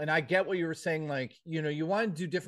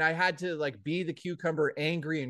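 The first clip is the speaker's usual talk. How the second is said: normal talking voice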